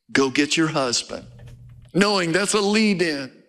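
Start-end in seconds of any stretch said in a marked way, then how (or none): 0.1-1.2 gentle, low fatherly voice. Retelling a story, the speaker quotes a reply, acting out a gentle, fatherly tone. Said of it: "so gently, like a father".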